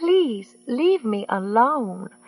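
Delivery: trembling, quavering voice. Narrating a story, reading a character's line in a shaky voice. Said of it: "Miss Sink said in a shaky voice".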